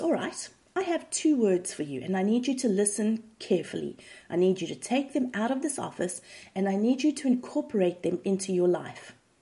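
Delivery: ordinary delivery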